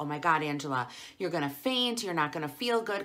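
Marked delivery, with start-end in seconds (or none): none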